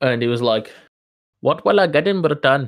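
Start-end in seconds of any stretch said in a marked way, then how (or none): 1.4-2.7 put-on Indian accent, higher. Retelling a creepy direct message from a stranger: imitating an Indian accent. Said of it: "he sounded exactly like that".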